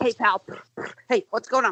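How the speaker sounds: sputtering, car-engine-like cartoon voice. Describing a cartoon car's voice, doing the Speed Buggy voice. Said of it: "It sounded like a car starting up".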